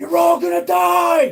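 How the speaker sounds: high, shrill, booming scream, die drawn out. Charging through a door into creatures in character: screaming. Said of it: "just screaming".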